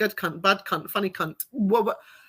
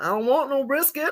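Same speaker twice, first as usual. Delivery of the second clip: pretend put-on American accent; 5 semitones higher than usual. Retelling an exchange with a woman, quoting her in a pretend American accent. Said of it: "the pretend American accent going".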